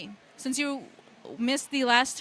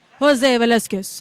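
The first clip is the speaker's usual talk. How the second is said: voice in a lower register, lower pitch; 2 semitones lower, 9 dB louder than usual. Trying again to pronounce a guest's name right, in a lower register. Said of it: "I have to go into a, a lower register".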